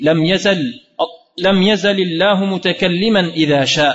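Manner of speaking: plain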